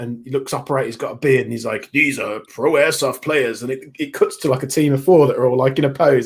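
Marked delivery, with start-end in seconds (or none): 1.9-3.6 dramatic voice-over narrator delivery. Describing an airsoft video's intro, imitating its narrator voice. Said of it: "with like a, a narrator voice".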